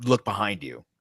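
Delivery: ordinary delivery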